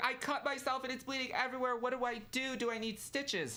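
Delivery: mock very high, frantic, panicked screaming. Retelling a man who cut himself screaming for help, retelling a panicked scream. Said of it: "And he starts screaming".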